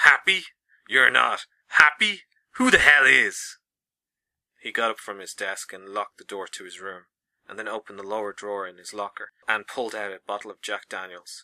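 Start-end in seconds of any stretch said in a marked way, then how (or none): 0.0-3.6 slow, scoffing, scornful snort of disbelief. [name] answers John, who says he is no longer happy in the job; snorting. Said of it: "[name] snorted".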